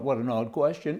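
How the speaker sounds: normal talking voice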